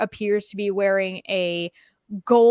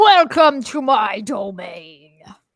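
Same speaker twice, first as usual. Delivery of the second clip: very slow, loud, drawn-out, swooping frog creature voice; 6 dB louder than usual. Voicing a crowned frog creature greeting the players: frog creature voice. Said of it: "the frog ... he's like".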